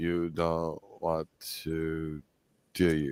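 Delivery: very low, soft, talking-down patronizing tone. Rereading the line aloud to show how it comes across, patronizing. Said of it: "as a patronizing when I read it like that".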